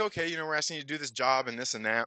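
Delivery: ordinary talk, nothing marked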